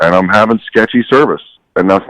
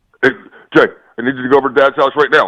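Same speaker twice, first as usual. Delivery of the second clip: put-on authoritarian barking voice, higher pitch; 7 semitones higher than usual. Imitating Steve's phone order on request: imitating Steve barking orders. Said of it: "Do his imperson-".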